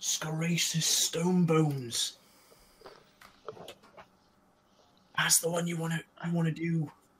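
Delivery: soft, hushed, confiding stage whisper. Voicing a gnome who tells another character a name: half-whispering in character. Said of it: "Nook's gonna whisper in Crex's ear".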